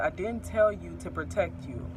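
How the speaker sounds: ordinary talk, nothing marked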